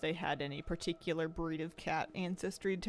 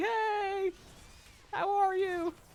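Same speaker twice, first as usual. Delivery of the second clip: very high, very slow, drawn-out bird voice; 5 dB louder than usual. Voicing Tiki the pet bird greeting her: voicing Tiki the bird greeting. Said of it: "he's always like".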